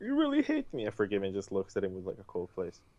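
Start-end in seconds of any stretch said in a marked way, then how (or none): 0.0-0.8 very high, tearful, crying wail. Retelling what a crying kid said: imitating someone crying.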